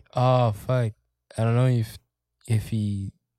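normal talking voice

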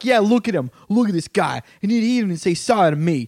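mock tough trash-talk tone. Retelling a stranger mouthing off to his friends: imitating tough talk. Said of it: "trying to, like, talk tough".

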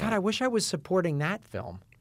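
ordinary delivery

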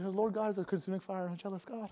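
rattled off quickly. Speaking to an audience, rattling the line off in a very fast delivery. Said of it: "That was really quick".

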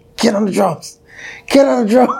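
screaming, pitched very high. Retelling freezing on stage at a first show: imitating someone screaming. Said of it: "him screaming at me".

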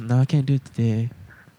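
exaggerated put-on female voice. Quoting her turning him down, in an exaggerated put-on voice. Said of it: "I'm only making that her voice sound like that".

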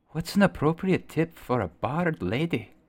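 barely audible half-whisper. A player half-whispers a quick question to another character: half-whispering as quietly as possible. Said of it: "I'm going to try and whisper this as quietly as possible".

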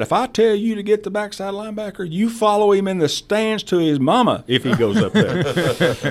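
put-on very high, shrill, hollering coach voice. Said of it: "yelling at me".

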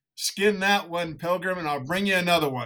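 put-on, high, hollered shouting yell. Retelling a movie scene where a mountain man yells through a window: imitating a yell. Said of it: "turns around and yells in the window and says".

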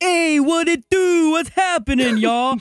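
put-on slow, very high, drawn-out New York accent. Acting out King Kong walking around New York: King Kong with New York accent. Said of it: "Why is King Kong got a New York accent?".

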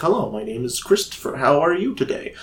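indoor speaking voice. Explaining a loud outdoor voice, demonstrating the indoor voice. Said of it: "inside is my indoor voice".

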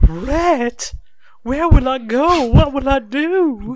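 very high-pitched film heroine voice. Pleading to Rhett in a Gone with the Wind bit: Scarlett O'Hara voice. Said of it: "here I thought you were doing Gone with the Wind".

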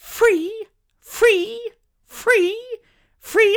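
very high, slow, drawn-out repeated beeping. Retelling reacting to a man's answer about the meal deal, high-pitched like a reversing lorry. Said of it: "in such a high-pitched voice, I sounded like a lorry reversing".

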